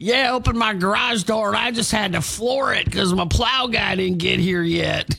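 put-on heavy, thick American South accent. Retelling a tv weather chat, quoting a news co-host with a thick southern accent. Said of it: "he had a really thick southern accent".

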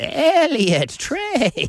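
otherworldly alien creature voice. Retelling the end of a video, the speaker says a name to the camera in an e.t. voice. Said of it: "That's a pretty good E.T".

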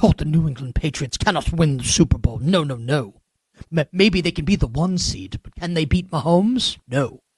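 put-on poorly done, dismissive British accent. Retelling his own dismissive analysis from yesterday: bad British accent. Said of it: "like the bad British accent".

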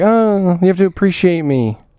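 needy voice of a man craving approval. Speaker mocking a man who wants to be appreciated, mock needy guy's voice. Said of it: "a guy who would need to be appreciated would have that voice".

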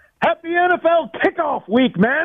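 excited shouting, pitched very high. A caller, [name], greeting the hosts; excited shouting. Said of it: "Sorry to be shouting in your ears, but I'm a little excited".

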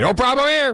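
high-pitched, authoritative voice. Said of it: "in an authoritative voice and say".

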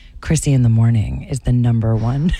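put-on sultry, sexy radio-style read. Asked to say the morning show's tagline in a put-on sexy voice. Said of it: "In my sexy [name] voice?".

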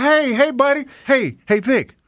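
high-pitched friendly voice. Showing how they greet someone, in a high-pitched friendly voice. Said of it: "with my high-pitched voice on".

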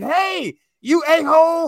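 acted-out shrill, high-pitched screaming. Retelling a guy walking out over his fireworks, imitating his scream. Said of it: "Dude's walking out screaming".

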